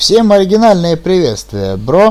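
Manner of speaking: over-the-top chirpy, exaggerated upbeat voice, pitched high. Podcast host opening the show, doing a parody of an optimist. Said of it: "сейчас очень сильно спародировал оптимиста".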